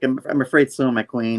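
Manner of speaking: ordinary talk, nothing marked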